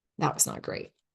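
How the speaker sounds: low, soft, muttered whisper.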